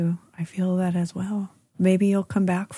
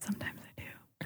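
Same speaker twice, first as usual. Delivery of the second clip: very quiet, barely audible stage whisper. Admitting to writing about The Bachelor: stage whisper. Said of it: "very quiet when you whisper".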